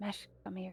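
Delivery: whispered voice. Speaking in character, calling mesh over: whispering. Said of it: "I'm gonna whisper to Mesh".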